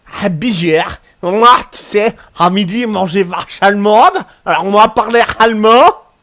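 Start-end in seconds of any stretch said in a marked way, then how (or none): 1.2-5.9 put-on German accent. Joking with co-players after finishing a league: put-on German accent. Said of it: "moi, parler avec accent allemand".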